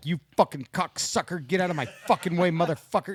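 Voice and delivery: mock furious cursing. Retelling cursing at a rider ahead in a race: retelling cursing angrily at a racer. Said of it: "I am seriously the whole time like".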